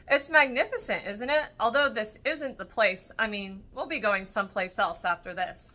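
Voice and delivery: ordinary delivery, nothing marked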